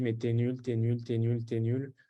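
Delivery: ordinary delivery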